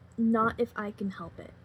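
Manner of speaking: normal talking voice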